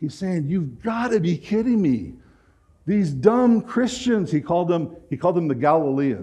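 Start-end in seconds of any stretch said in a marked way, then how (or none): 0.5-4.3 put-on screaming voice, higher pitch. Retelling what Julian the Apostate said to the Senate: imitating him screaming. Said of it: "I can imagine he's screaming at the Senate".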